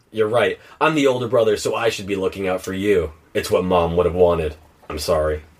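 ordinary talk

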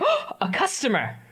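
startled, eager, excited voice with a gasp. Voicing a fast food employee spotting a customer: gasping excited employee voice.

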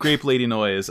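ordinary delivery

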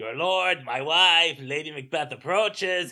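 put-on loud Mexican accent. Recalling how a cartoon character delivered a Macbeth line: Sheen impression. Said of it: "so he says it like".

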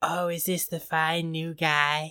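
slow, sultry impression voice. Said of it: "That was my Jennifer Tilly impression".

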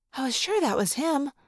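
plain reading voice

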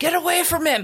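high-pitched screaming. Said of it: "I don't have to be screaming at other people".

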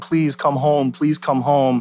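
imitated, acted pleading put-on voice. Contrasting an invitation with a command, voicing Jesus: imitating pleading. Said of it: "he's pleading".

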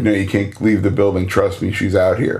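ordinary delivery

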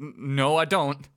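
put-on scared, concerned voice. Quoting a delivery they find terrifyingly paced, imitating Big Ed, scared. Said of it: "he's very scared and concerned".

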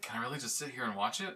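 mock thrilled, eager, fast, excited, can't-believe-it gushing. Retelling how a character reacts to wrestling on screen: imitating someone excited. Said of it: "She gets so excited".

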